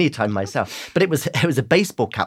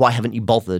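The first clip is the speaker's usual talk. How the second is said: put-on accusatory tone. Retelling what people kept asking at school: imitating an accusatory tone. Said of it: "in a very accusatory tone".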